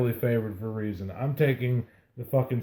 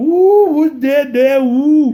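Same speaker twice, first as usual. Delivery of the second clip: put-on very high, very loud, shrill Cajun accent; 14 dB louder than usual. Co-host imagines the crowd at a Louisiana game, put-on Cajun accent. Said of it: "That accent is just".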